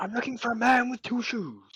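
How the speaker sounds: loud bellow. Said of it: "Nazcul roars his introduction".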